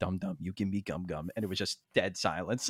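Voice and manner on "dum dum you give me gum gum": muttering under breath, lower and quieter. Retelling a meeting where coworkers mention the company name: muttering under my breath. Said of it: "under my breath went".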